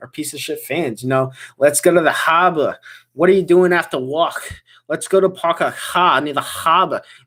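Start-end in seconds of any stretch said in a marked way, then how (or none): 1.6-7.0 put-on Boston accent. Mocking Red Sox fans while answering a super chat: mock Boston accent. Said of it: "I hate that accent".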